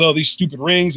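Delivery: plain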